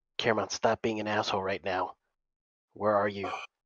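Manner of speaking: in a whisper. Calling out for Caramon, who can't be seen, whispering. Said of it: "I'm trying to whisper".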